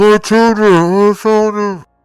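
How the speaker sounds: loud muffled voice. Game master voicing a cry heard through a wall, loud muffled voice. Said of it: "a loud, uh, a muffled voice, like coming through the wall".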